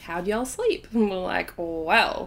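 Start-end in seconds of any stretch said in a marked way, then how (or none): 0.0-0.9 friendly, put-on American accent. Retelling a couple's greeting at breakfast, imitating an American accent. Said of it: "that's my American accent".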